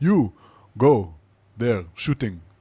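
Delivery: Israeli accent with broken English. Speaker acts out telling him what to do in a life-or-death moment, Israeli accent, broken English. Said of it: "It's my Israeli accent".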